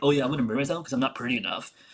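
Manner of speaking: put-on derisive, mocking, taunting tone. Mocking another person's recent statements by imitating them: mocking imitation of someone. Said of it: "you're like".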